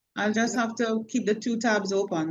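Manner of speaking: plain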